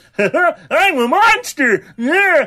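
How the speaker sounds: very high, loud, silly goofy dub voice. Comparing a character's japanese and english voices; imitating the english dub voice. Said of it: "Voice that he had in the English one".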